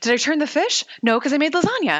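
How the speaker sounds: frazzled, flustered, nervous, rattled-off babble. Recapping a scene, the speaker quotes Monica: imitating flustered, nervous Monica. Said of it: "Monica's all like flustered and nervous where she's like".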